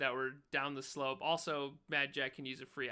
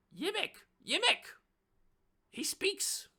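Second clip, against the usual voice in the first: shrill, very high-pitched squeaking goblin voice. Voicing goblins surprised that the player speaks Goblin: goblin voice. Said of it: "and they're like".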